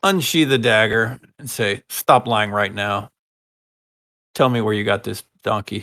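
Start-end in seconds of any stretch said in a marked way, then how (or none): 1.9-5.8 menacing, intimidating, threatening tone. A character unsheathes a dagger and demands an answer, intimidating. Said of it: "Making an intimidation check".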